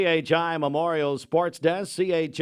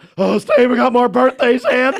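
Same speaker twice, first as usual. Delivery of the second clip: put-on breathless panting, higher and louder; 7 semitones higher, 9 dB louder than usual. Retelling how Bridget announced more birthdays: imitating Bridget panting breathlessly. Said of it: "panting and breathlessly telling me".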